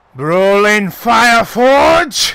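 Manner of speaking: very loud, high-pitched yell. Narrating a character who looks at the fallen player and yells out: yelling out a name. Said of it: "And he yells out".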